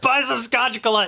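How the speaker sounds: yelling salesman voice. Seller pushing scotch gillette on a customer, yelling sales pitch. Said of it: "Just stop yelling at me".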